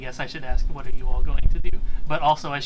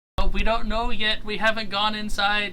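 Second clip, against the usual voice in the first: high-pitched yell, as if from afar; 7 semitones higher, 3 dB quieter than usual. Voicing men on a hill warning travelers: yelling a warning from afar. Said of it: "so we can stop yelling?".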